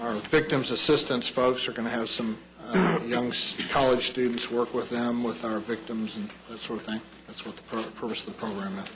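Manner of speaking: hurried, fast, rushed mumbling. Presenting an internship agreement for approval, mumbling too quickly. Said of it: "what did you just mumble to us?".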